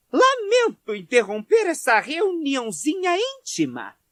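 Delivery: very high, shrill, trembling furious shout. Narrator reads Mrs. Weasley interrupting a small gathering; Mrs. Weasley shouting, trembling. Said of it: "vociferou ela com a voz trêmula".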